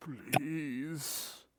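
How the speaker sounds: tearful, sobbing, crying, begging tone. Voicing a starving vampire sobbing at the players: sobbing vampire plea. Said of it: "He's just full on sobbing as he looks at you".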